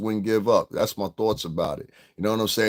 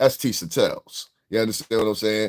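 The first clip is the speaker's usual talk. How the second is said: ordinary talk, nothing marked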